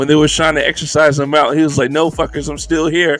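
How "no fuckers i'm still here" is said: imitated disdainful, scornful manner. Retelling how a character answered those trying to exorcise him: imitating a disdainful character. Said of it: "his disdain for all humans".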